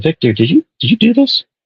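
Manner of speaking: very high, deeply concerned, almost emotional voice. Retelling a trailer line: concerned, almost emotional Pedro Pascal read. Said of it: "he's saying it very concerned and almost emotional".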